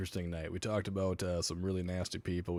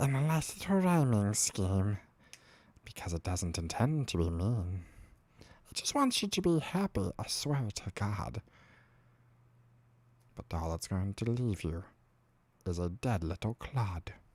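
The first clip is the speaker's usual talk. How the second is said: creepy, creature-like voice; 2 semitones higher than usual. Playing the shaved version of oneself, in Boigle voice. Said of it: "Just talking like this".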